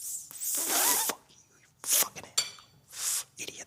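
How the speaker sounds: slow, whispered mutter under the breath. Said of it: "I'm just under my breath".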